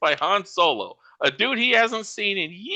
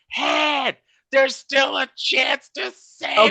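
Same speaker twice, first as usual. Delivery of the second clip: crying out, pitched up; 5 semitones higher than usual. Retelling a scene where Lando screams while being choked: imitating Lando screaming. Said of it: "he's still screaming".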